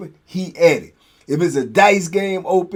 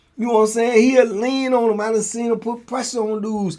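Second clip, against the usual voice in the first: usual speaking voice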